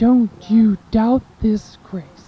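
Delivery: mock-stern, put-on stern voice. Speaker retelling a voice heard while passing San Rafael, retelling a stern voice. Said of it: "I heard very sternly".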